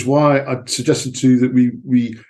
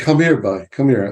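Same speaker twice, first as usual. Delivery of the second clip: put-on Cornish accent, grandfather-like old man voice. Retelling what his granddad said to him in the garden, in a Cornish accent. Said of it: "That's my best Cornish accent".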